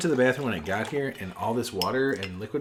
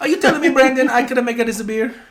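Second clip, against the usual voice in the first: very high, very loud put-on Italian accent; 12 semitones higher, 10 dB louder than usual. Tasting a beer, the speaker asks Brandon a question in a put-on Italian accent. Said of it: "I can do that uh, uh, accent".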